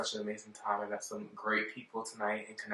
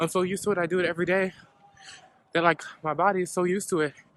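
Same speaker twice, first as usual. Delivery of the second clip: raised, out-of-breath panting, huffing and puffing; 9 semitones higher, 7 dB louder than usual. Speaker walks up a hill everybody hates, talking to viewers: huffing and puffing. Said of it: "right now I'm huffing and puffing".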